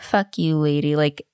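mock dismissive teen retort. Retelling how a teen answered Evelyn in a parking lot, retelling a dismissive teen. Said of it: "just so dismissive".

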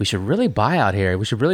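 ordinary delivery

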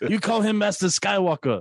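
very high-pitched put-on voice. Speaker imagining a Clone Wars scene, doing a Short Round impression. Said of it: "I'm literally just trying to do a Short Round impression".

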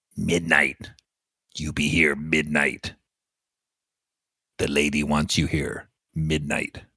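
voice of a goblin. Voicing a goblin telling the party to come back at midnight: goblin voice. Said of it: "He looks at all of you and goes".

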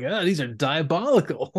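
slow, drawn-out delivery, deeply impressed, savoring each word. Retelling what Wheeljack says about the chips: imitating Wheeljack sounding impressed. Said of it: "but he sounds really impressed".

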